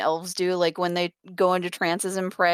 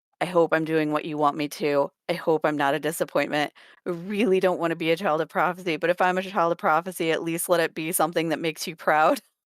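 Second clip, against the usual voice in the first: plain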